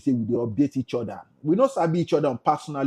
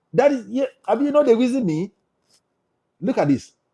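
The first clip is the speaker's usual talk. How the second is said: plain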